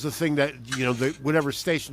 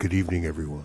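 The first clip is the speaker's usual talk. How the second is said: very deep, very low FM radio announcer voice; 9 semitones lower than usual. Showing off an on-air voice while greeting everyone: deep radio voice. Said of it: "utilizes his radio voice. As do I".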